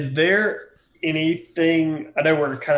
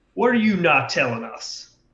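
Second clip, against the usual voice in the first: in-your-face, confrontational tone; 3 semitones higher than usual. A player's character points an axe at a man, getting in his face. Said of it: "I'm like in his face".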